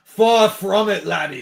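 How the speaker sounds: put-on slow Scottish accent. Quoting a cartoon character to the other speakers: Scotsman from Samurai Jack voice. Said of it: "the Scotsman from Samurai Jack".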